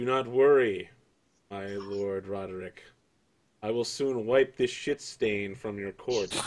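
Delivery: confidential, just-between-us private aside. Narrating a game scene, a knight speaks so only the earl and you hear: very quietly. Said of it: "very quietly, just so only you and Earl Roderick can hear".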